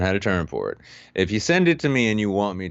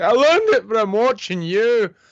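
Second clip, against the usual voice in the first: put-on high, loud Scottish accent. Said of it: "Where'd you learn that Scottish accent?".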